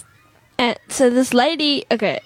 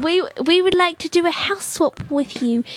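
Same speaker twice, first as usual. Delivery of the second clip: fake woman's voice, high. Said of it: "I love how you gave her a voice".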